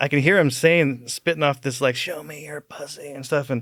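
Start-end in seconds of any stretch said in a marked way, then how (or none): 1.9-3.1 put-on rude harsh drunk, much quieter, slower. Playing pool, the speaker retells what a drunk guy was saying: imitating a rude, harsh drunk. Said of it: "rude, harsh".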